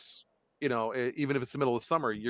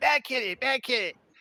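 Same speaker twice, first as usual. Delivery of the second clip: shrill yelling way up high; 13 semitones higher than usual. Retelling how someone yelled at the cat one night, a Cartman-voice yell. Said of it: "and Jim yells".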